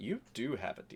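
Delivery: small, tiny little voice heard from close by. Recounting a game scene, a voice pipes up beside the player; small voice. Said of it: "there's a small voice next to you that goes".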